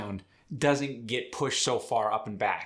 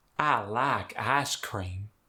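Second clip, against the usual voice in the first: slow, drawn-out Southern American accent. Showing how the sentence sounds in the south: southern us accent. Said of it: "In the South".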